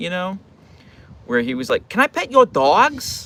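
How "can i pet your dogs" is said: put-on high, slow little-kid voice with speech impediment. Retelling a kid asking to pet the speaker's dogs, stereotypical kid voice. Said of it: "he talks like this in like the most like stereotypical kid voice".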